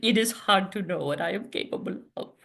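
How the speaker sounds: poor put-on vague Eastern European accent. A salon host tries a poor French accent, in a vague Eastern European accent. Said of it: "that's more amorphous Eastern European".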